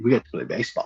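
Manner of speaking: put-on drawling Southern accent. Speaker repeats a man's line to Brooks, southern drawl. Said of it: "you got to put that southern drawl in your voice".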